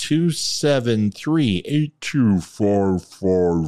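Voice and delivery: slow, deliberate reading, each digit given its own space. Giving the Veteran Crisis Hotline number to listeners, saying it slower. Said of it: "My wife said to say it slower".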